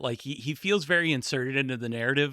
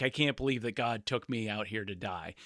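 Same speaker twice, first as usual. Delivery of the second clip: frustrated, exasperated, fed-up protesting tone; 3 semitones lower, 6 dB quieter than usual. Retelling a movie scene, quoting a character: imitating a frustrated complaint.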